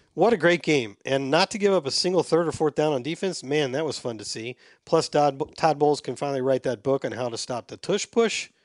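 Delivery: ordinary talk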